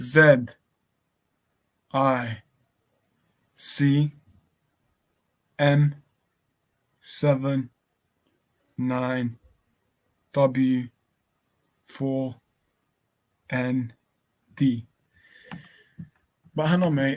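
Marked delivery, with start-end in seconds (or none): 0.0-14.9 very slow, halting, spelled letter by letter. Repeating a code a second time for a listener, spelled out slowly. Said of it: "and I'll say it slowly".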